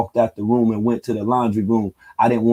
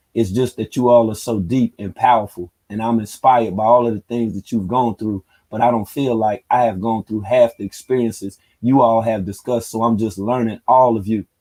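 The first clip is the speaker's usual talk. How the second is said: normal talking voice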